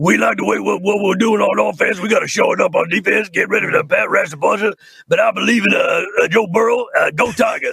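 rough, creaky, raspy coach voice. Showing others a voice done for an animated rat: Ed Orgeron voice. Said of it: "and I did Ed Orgeron".

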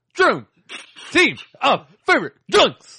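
each word barked out, loud and high. Reading out the team names to the others, barking the words. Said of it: "you're barking the fucking words".

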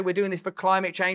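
normal talking voice

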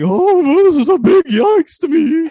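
absurd, very high, very loud, drawn-out shrill voice. Retelling how someone mocked another person online: imitating a ridiculous mocking voice. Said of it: "doing this ridiculous voice".

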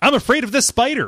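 loud high-pitched yelling.

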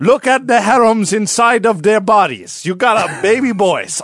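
put-on Middle Eastern accented speech. Continuing the boastful king bit: put-on Middle Eastern accent. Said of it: "I can't do a Middle Eastern accent".

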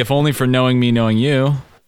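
ordinary delivery

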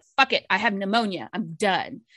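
plain

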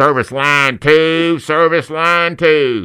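loud, high store loudspeaker announcer voice. A guest asking about job openings shows off pa announcement voices: pa announcer voice. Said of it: "I can do PA announcements with different voices".

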